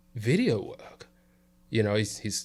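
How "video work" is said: put-on English, British accent. Retelling what a british man asked them, imitating a british man's accent. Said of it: "you was doing the accent".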